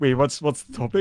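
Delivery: ordinary talk, nothing marked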